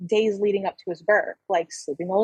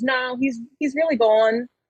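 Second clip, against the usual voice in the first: plain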